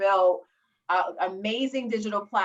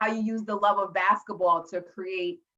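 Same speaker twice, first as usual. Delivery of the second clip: ordinary delivery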